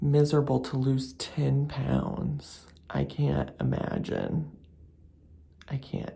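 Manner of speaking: speaking in a whisper. Complaining about stomach pain while someone sleeps nearby: whispering. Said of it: "I'm also whispering because Noel's still asleep".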